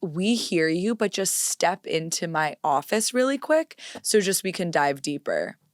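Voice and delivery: ordinary talk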